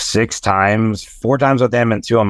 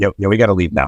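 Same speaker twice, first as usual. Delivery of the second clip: acted-out quiet mutter under the breath. Retelling what a companion said as things turned awkward, retelling a mutter under breath. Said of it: "Jim's just kind of like under his breath".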